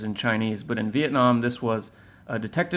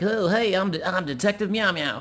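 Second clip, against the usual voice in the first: put-on pitched-up, proud, brave young-boy voice; 7 semitones higher than usual. Retelling playing Detective Meow Meow in Fry from Futurama's boy voice. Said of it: "like a boy voice".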